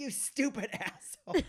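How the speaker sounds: very high, shrill, angry snapping tone. Retelling a comedian's reply to a heckler: imitating Joan Rivers snapping angrily. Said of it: "she just snaps on this heckler".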